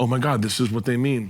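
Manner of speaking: panicked-sounding voice. Telling of falling face-first into deep snow, retelling own panic. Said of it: "and I'm like panicking".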